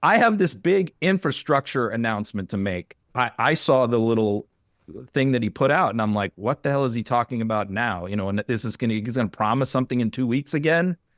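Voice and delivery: plain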